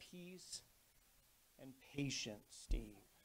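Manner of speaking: very soft, very quiet, hushed, still small voice. Retelling a voice heard after getting past a man, in a quiet voice. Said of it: "this quiet voice that said".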